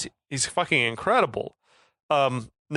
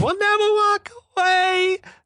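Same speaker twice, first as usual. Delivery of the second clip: shrill, high, slow, drawn-out scream; 4 dB louder than usual. Retelling a movie scene where a haunted-looking man screams: imitating a scream. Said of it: "the haunted looking man is screaming".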